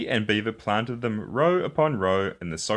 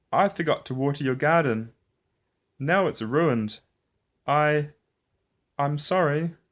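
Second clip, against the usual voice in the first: trembling, halting, shaky, pitched-up voice; 5 semitones higher than usual. In a read story, one character answers another: shaky voice. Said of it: "Franklin said in a shaky voice".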